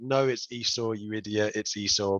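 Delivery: ordinary talk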